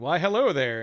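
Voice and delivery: loud, flowery delivery laid on thick. Retelling meeting Elminster in a game: flowery Elminster voice. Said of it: "he speaks all extra, uh, flowery".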